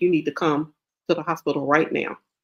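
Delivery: put-on, very stern voice. Retelling what a doctor said on the phone: imitating a very stern voice. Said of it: "her voice was, like, very stern".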